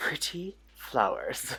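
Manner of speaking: soft, airy, breathed-out voice. Repeating own words while piping icing: Martha Stewart voice. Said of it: "I naturally sounded like Martha Stewart just now".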